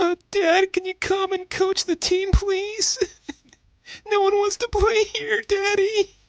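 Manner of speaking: fake whiny pleading tone. Mock-begging as a baseball manager's son: mock crying nepo baby voice. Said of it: "why is Preston Mattingly crying?".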